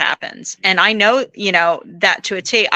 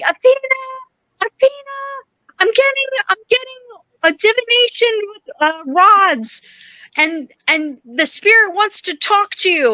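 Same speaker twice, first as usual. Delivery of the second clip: put-on very high, calling yell; 13 semitones higher than usual. Retelling a girl running down and yelling a name: imitating someone yelling. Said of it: "starts yelling for me".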